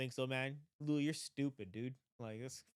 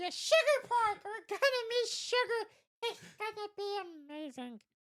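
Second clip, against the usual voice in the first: put-on very high little girl voice; 5 dB louder than usual. Retelling a game's story on a podcast, voicing the daughter: little girl voice. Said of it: "the girl little girl's voice actor".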